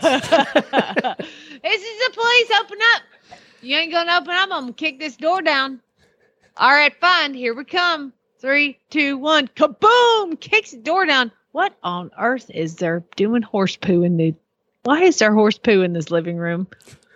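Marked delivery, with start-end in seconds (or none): 0.0-10.4 put-on Southern drawl, cop-like. Acting out a police officer knocking on a door: put-on southern accent. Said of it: "Why do your police always have Southern accents".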